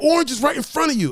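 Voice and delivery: high, shrill, exasperated screaming. Retelling a game session, the speaker re-enacts yelling at his gaming partner: retelling his own screaming. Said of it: "I'm screaming at".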